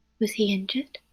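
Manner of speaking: close, hushed, secretive whisper. Playing a character who pulls someone into a whisper conversation: whispering. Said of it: "whisper conversation".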